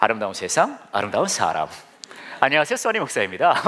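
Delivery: put-on on-air radio host delivery. Showing the voice the speaker uses when doing radio, radio announcer voice. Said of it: "라디오형 목소리가 있거든요. ... 이렇게 가요".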